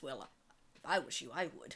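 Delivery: low, grumbled mutter under the breath. In a tabletop game, a player voices her character replying to another: muttered under her breath. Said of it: "under her breath".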